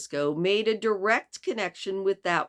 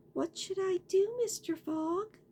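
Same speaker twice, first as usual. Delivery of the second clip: gentle, sweet, soft, very high voice; 14 semitones higher, 5 dB quieter than usual. Narrator reads Aouda's words to Mister Fogg in a sweet, soft voice. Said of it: "in her sweet, soft voice".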